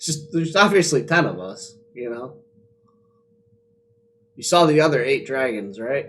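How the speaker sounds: sarcastic, mocking tone. Answering a suspicious character about how many there are: sarcastic. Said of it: "I'm gonna say that sarcastically".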